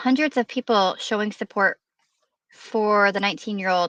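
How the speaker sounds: ordinary talk, nothing marked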